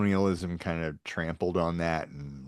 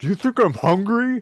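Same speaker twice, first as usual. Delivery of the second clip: mock very high, loud, food-stuffed garbled talk; 8 dB louder than usual. Retelling an uncle's reply with turkey in his mouth: imitating talking with mouth full. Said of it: "turkey hanging out of his mouth".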